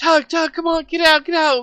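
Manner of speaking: very high panicked shouting. Describing banging on a door, speaker acts out the people outside, imitating panicked people. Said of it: "they're like panicking".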